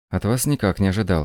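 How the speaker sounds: ordinary delivery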